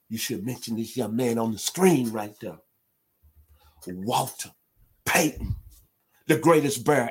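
heartfelt, emotional delivery. Telling a coach who he should mention first, getting emotional. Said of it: "I'm sorry if I'm getting emotional".

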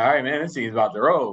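usual speaking voice

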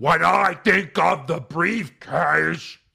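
put-on monstrous voice. Mocking how Braun talks when trying to be monstrous: monstrous Braun voice. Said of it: "like he's eating something still and trying to be monstrous".

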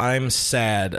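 ordinary delivery

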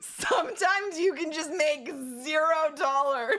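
high, loud laughing outburst of disbelief.

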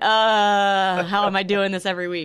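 ordinary delivery

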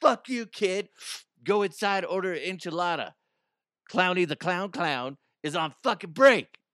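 grumpy, rude clown voice. Acting out a clown on smoke break snapping at a kid: imitating a rude smoking clown. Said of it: "And he's like".

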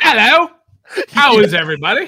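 loud, high, shrill put-on English accent. Host greeting the livestream audience, in an English accent. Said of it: "That's all I got for an English accent".

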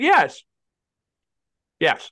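talking around an ice cube. Agreeing with another speaker while chewing an ice cube: chewing ice while talking. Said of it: "I'm chewing an ice cube".

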